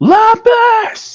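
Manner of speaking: very high-pitched, shrill screaming yell. Screaming a name outside a door in the game: screaming a name. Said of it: "I'm just screaming out his name".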